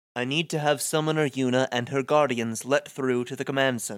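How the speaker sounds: viscous, slimy sleazeball voice. Reading a game script aloud as Seymour: Seymour's viscous delivery. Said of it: "as I'm trying to imitate it, it sounds like I'm inflecting too much slimy sleazeball".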